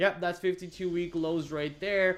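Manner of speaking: ordinary talk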